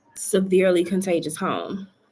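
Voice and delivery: ordinary talk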